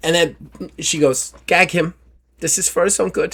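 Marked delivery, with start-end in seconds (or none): 1.5-3.4 failed attempt at a French accent. Voicing a character ordering a captive gagged: failed French accent. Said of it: "That was not French".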